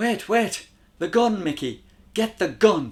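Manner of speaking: very high, loud, urgent shout. A woman spots the gun and calls out to Mickey: crying out. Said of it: "she cried and ran over to the Glock".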